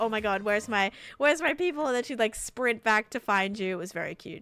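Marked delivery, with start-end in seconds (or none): 0.0-1.9 mock anxious, panicked dog voice, rising. Voicing the anxious dog who notices her people stopped: put-on panicked dog voice. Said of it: "she'd turn around and she'd be like".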